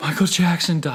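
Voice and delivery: bawling and sobbing, high, loud wailing. Retelling the pastor's phone call about [name]: imitating someone bawling. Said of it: "just bawling on the phone".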